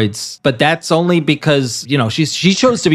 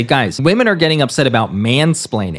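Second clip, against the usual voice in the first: plain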